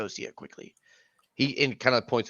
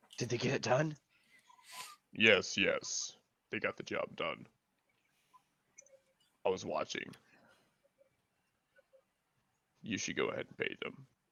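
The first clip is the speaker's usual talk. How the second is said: terrifying, scary voice, somewhat quieter; 3 semitones lower, 7 dB quieter than usual. Voicing a new character at a booth: terrifying voice. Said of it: "That was a terrifying voice switch".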